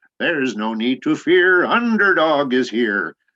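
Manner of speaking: loud, high-pitched quivering tremolo. Demonstrating the quality of a cartoon voice, do a tremulous, quivering Underdog voice. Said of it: "tremulous, the quivering quality".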